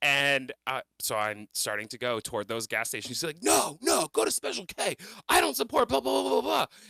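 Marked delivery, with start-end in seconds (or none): 3.4-6.6 very high, shrill, ragged, angry screaming. Driving toward the gas stations, retelling how he screamed at me: retelling him screaming. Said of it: "he's like screaming at me".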